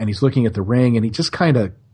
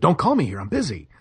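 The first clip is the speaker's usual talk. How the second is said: put-on light, half-hearted mild yell; 3 semitones higher than usual. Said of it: "the part where he's yelling".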